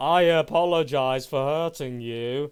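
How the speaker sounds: loud, slow, drawn-out, mocking insincere tone.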